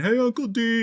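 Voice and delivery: put-on shrill, very high shouted screaming like kids. Retelling nephews calling from the boat launch, imitating nephews screaming. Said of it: "they're screaming".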